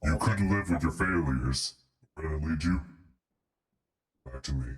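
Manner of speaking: very low, deep dude voice. Showing off a newly bought voice changer: Thanos voice. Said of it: "I got Titan, which is literally just Thanos, but just general deep voice dude".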